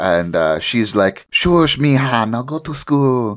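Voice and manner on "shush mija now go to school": put-on Spanish accent, much higher. Retelling a TV scene, voicing the mother answering her son, Spanish-sounding accent. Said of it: "she's like Spanish of some sort".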